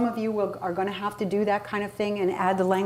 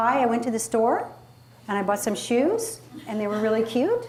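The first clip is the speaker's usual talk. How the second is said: statements rising at every phrase end; 2 semitones higher than usual. Explaining upspeak, where everything goes up at the end, rising pitch at each phrase end. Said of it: "Upspeak is when you talk where everything goes up at the end".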